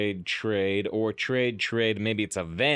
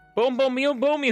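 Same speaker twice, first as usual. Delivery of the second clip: very high, loud put-on anime character voice; 5 dB louder than usual. Playing a card game turn after chat asks for one: anime voice. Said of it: "the anime voice turn".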